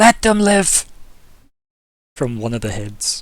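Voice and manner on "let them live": put-on very loud, high, crackling, raspy old shriek. One of the heads screams from the other side of the lake, crackly old raspy scream. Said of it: "this crackly, old, raspy voice, just kind of screaming".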